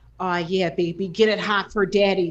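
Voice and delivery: put-on heavy, thick Chicago accent laid on hard. Imitating her partner during foreplay, hardcore Chicago accent. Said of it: "he has a real hardcore Chicago accent".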